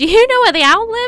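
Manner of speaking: high little mouse character voice. Voicing a mouse character for listeners, in a high mouse voice. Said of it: "it's getting even higher now with the mouse".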